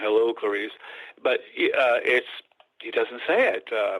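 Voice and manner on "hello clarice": deep-toned, dropped low voice. Quoting a misremembered movie line: deep-toned Hannibal voice. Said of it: "this deep tone".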